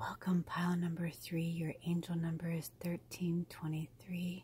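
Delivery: speaking in a whisper. Welcoming viewers of pile three to a reading: whispering. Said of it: "I'm whispering to you".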